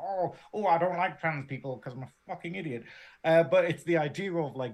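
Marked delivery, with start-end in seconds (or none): 0.0-2.8 lampooning, derisive put-on bigot voice. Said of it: "I quite like that voice".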